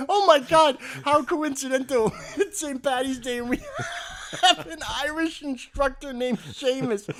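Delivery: high, loud, excited gushing woman's voice. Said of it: "she goes".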